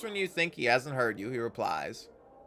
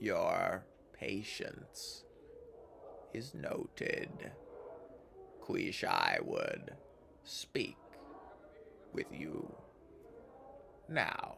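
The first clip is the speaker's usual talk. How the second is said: ponderous grinding voice, much lower, quieter, slower; 5 semitones lower, 9 dB quieter than usual. In the scene, this being answers at last: a ponderous, boulder-grinding voice. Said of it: "speaks ponderously with a voice like two boulders grinding together".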